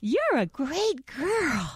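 gushing, very high, very slow, swooping enthusiasm. Praising them when they go to the bathroom outside, like a baby: enthusiastic. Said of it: "you talk to them with a lot of enthusiasm in your voice".

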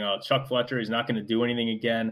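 normal talking voice

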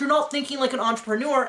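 ordinary talk

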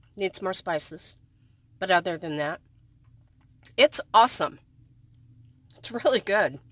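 speaking with a mouth full of food. Tasting spaghetti at the end of a video, talking with mouth full. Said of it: "talking with my mouth full".

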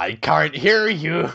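cartoon pirate captain voice. Acting out the SpongeBob intro, in that pirate's voice. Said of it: "what that pirate would sound like on SpongeBob".

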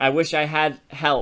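ordinary delivery

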